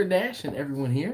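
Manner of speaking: normal talking voice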